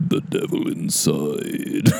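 eerie horror trailer narrator voice, rough and creaky. Recalling a horror film's trailer that was always on: The Devil Inside trailer voice. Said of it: "the voice was just like".

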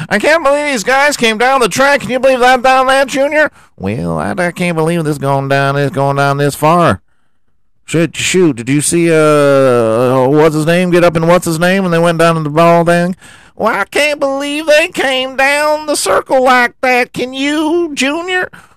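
high mock sports announcer voice. Mocking the football commentary on TV, doing a high-pitched commentator voice. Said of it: "Everybody's talking like this".

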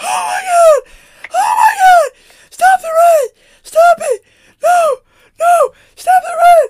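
shrill, booming, very high, drawn-out panicked cries. Retelling a brother and sister on the Joker ride: imitating someone crying out. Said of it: "crying out there".

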